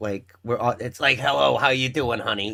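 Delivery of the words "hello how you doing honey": exaggerated, put-on raspy smoker's voice. Imitating an impression of a long-time smoker: exaggerated smoker's voice impression. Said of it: "super exaggerated".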